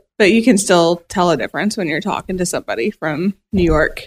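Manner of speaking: ordinary delivery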